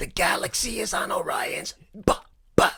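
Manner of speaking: slow, breathy, fading dying whisper. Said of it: "like the little alien on his last breath".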